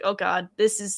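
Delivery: normal talking voice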